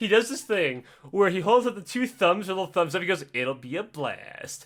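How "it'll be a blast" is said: very slow, every word stretched out. Retelling a friend's thumbs-up goodbye: imitating Tim. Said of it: "he said it exactly like that".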